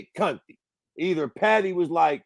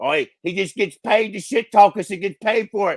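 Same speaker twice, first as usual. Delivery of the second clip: horrible, badly done, put-on Liverpool Scouse accent; 3 semitones higher, 5 dB louder than usual. Imagining being paid to trash-talk fighters, voicing the fighters' reaction; bad scouse accent. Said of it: "That's my scouser accent".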